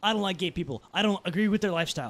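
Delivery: ordinary talk, nothing marked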